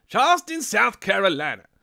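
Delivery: booming, high-pitched shout with large swooping pitch. Reading out a viewer's hometown, trying a Chris Rock impression. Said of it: "I can't do a Chris Rock impression".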